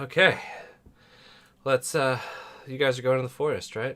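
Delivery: puffing, breathless, winded talk. Speaker addresses the group after roughhousing with a toddler during the break, winded. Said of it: "I'm winded".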